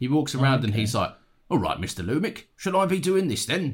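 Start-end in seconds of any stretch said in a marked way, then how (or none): 1.5-3.7 cockney British man's voice, pitched a little high. Speaker describes a top-end cockney British fella, doing Alfred Pennyworth's cockney voice. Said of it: "top-end kind of cockney British fella".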